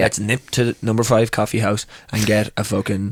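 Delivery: plain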